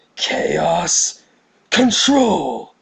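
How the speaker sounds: yelled up high like a hero. Retelling a skit of Shadow making brownies: Shadow voice shouting. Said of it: "if Shadow was in the kitchen trying to make brownies".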